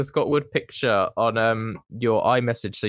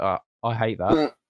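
mock-serious, put-on very serious tone; 2 semitones lower than usual. Imitating the other speaker's reaction to an image: imitating a very serious tone. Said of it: "that was the most serious you've ever been".

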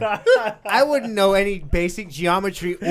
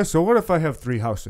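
put-on New Hampshire voice, pitched lower; 3 semitones lower than usual.

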